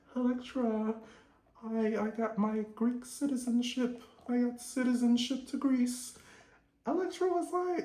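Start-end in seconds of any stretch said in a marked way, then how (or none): 0.2-6.2 very proper, well-spoken, pitched-up voice. Retelling how Angie answers her daughter: imitating Angie, soft and proper. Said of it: "real soft and proper".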